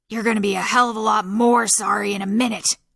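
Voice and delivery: harsh rasping voice. Reading Abner's reply to Kempel's apology, rasping. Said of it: "stomping down the hall without a shirt on, / stomping down the hall without a shirt on, his red-gray hair sticking up in all directions around his scruffy face. His wild eyes take in the mess, and his".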